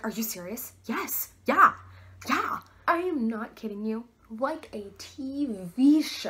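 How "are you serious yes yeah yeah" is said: completely overexcited, gushing voice. Retelling being asked out by the lockers at school, re-enacting losing it. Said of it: "I lost it".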